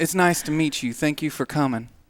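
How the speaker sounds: normal talking voice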